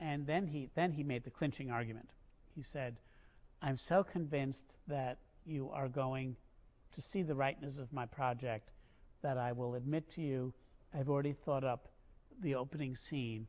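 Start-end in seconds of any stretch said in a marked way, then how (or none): none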